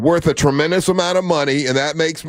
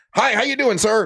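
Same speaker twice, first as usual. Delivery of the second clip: cheery, high-pitched, really happy American voice; 7 semitones higher than usual. Acting out greeting locals abroad as a really happy american. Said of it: "a really happy American".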